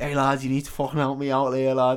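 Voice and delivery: mock Scouse voice, fake Liverpool accent. Retelling a story about a man in a toilet cubicle asking for help, put-on Scouse accent. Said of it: "He's not scouse".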